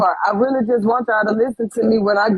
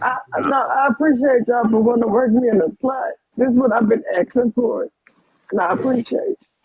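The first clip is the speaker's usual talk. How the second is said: tearful, crying through the words. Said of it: "Lucy, are you crying?".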